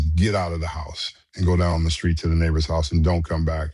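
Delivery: normal talking voice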